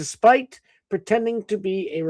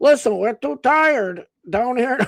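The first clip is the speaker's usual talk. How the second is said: put-on high Northern Midwestern accent; 6 semitones higher, 3 dB louder than usual. Voicing the Rhode Island searchers who gave up on Bigfoot: put-on Northern Midwestern accent. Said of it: "Northern Midwestern accent here".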